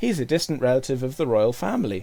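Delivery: plain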